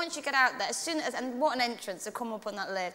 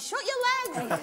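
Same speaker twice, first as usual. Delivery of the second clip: very high shout in put-on American accent; 12 semitones higher than usual. Recalling the director on the show, the speaker is retelling a shout in American accent. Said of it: "But in an American accent".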